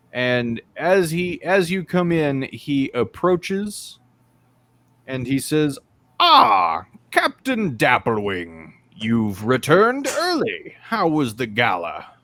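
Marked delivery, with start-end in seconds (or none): 6.2-12.0 clockwork butler voice, swooping sing-song. Voicing a clockwork butler greeting a returning captain: clockwork butler voice. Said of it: "this clockwork butler".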